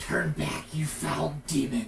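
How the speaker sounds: very loud, rough, throaty guttural roar. Narrator voices the response to a player's question: guttural voice. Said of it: "you hear in a guttural voice-like response".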